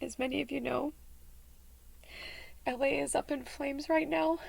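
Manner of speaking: high, tearful voice breaking, holding back tears.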